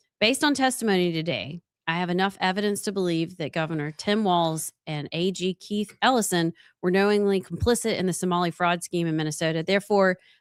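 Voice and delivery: normal talking voice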